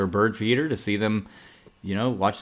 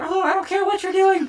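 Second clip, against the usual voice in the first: very high-pitched dismissive brush-off voice; 4 dB louder than usual. Making a second try at doing the speaker's mom, imitating mom. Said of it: "my second try is always better".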